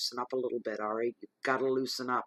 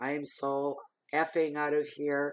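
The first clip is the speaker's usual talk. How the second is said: plain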